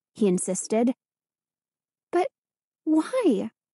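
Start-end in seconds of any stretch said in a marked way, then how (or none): 2.1-3.5 small, tiny, high little voice. Told to hand over her letter, she asks why in a tiny voice. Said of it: "Hannah asked in a tiny voice".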